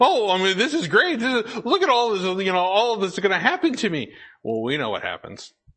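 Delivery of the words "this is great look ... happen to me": put-on gleeful giddy excitement, high and swooping. Retelling him telling his friends his news, mock-excited Haman. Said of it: "he's getting all excited and he goes and tells his friends".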